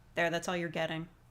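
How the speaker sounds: usual speaking voice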